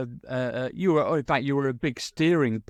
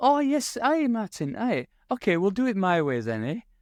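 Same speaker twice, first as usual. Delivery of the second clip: really charming, pitched-up voice, charm poured on; 8 semitones higher than usual. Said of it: "just like really charming".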